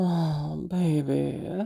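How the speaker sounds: playful, teasing, flirty voice. Retelling how they flirted, switching into a teasing voice. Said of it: "I switched from my teasing voice".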